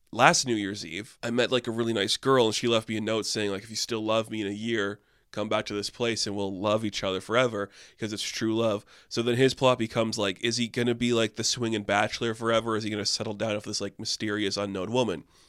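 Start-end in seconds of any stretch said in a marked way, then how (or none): none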